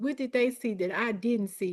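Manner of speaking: plain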